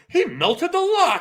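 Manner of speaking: very high, slow, affronted, indignant offended tone. Imitating a film doctor's line, imitating an offended tone. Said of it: "like he's all offended by it".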